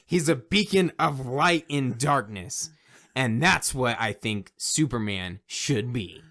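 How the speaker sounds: earnest, cringey, put-on impassioned pitch. Pitching a Superman version as a joke: mock passionate pitch. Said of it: "I felt the passion".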